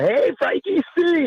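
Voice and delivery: high, drawn-out, screamed yell.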